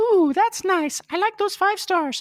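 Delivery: creepy high voice. Podcast host asking for reviews, voicing Google's reaction: creepy Google voice. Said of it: "that was unnecessarily creepy, Google".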